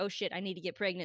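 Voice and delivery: ordinary talk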